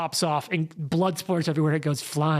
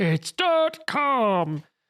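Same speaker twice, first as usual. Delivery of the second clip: put-on old man voice, pitched higher; 6 semitones higher than usual. Joking about being old and remembering Flash animations: old man voice. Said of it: "keep up the old man voice for that whole bit".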